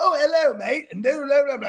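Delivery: put-on generic English accent. Describing talking to English people in a made-up accent: fake English accent. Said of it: "I'm doing this because it sounds universal".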